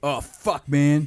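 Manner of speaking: put-on full-voiced shout at the top of lungs. Retelling a classmate's reaction during an exam: imitating a guy shouting. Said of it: "at the top of his voice".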